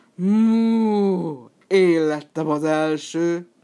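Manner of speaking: loud, very slow contented bellow, mm stretched. Narrator reads the buffalo reaching the race spot first; contented bellow. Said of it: "A bivaj elégedetten bődült el".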